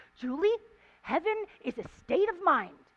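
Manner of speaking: really irritated, fed-up blurted tone. Speaker retelling what a woman finally blurted out at her, imitating her irritated tone. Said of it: "she just blurted out in this really irritated tone with me".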